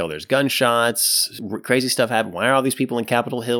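ordinary talk

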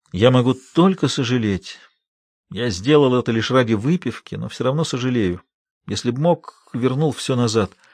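plain reading voice

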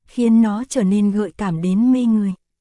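plain reading voice

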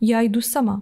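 plain

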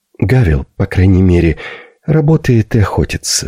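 theatrical whisper. A widow in a story scolds the girl, half-whispering. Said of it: "прошептала вдова".

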